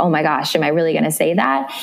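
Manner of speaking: ordinary talk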